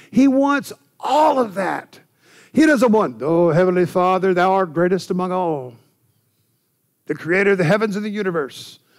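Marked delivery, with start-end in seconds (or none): 3.5-8.7 put-on old-English archaic prayer style, delivered faster. Speaker shows how someone might pray, in a King James-style prayer. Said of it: "you can pray in old English if you want to, King James style".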